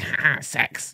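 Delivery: put-on breathy gremlin voice, whispered chuckle. Mocking people who laugh at crude jokes: put-on gremlin voice. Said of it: "He did the same Gremlin voice".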